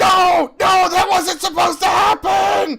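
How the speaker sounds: very high, loud, drawn-out scream of agony. Voicing a character screaming as his hair lights on fire: character yelling in pain. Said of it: "you hear him also yell out the words".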